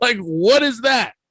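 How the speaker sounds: mock shout, high-pitched and slow.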